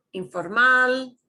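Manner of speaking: hard stress on final -mal of informal. Pronunciation lesson on words ending in L: stress on -mal of informal. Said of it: "we punch the end of the word".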